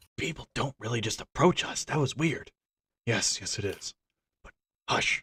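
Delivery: speaking in hushed whispers. A game narrator voices two strangers talking between themselves: speaking in whispers. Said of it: "as they're trying to speak in whispers".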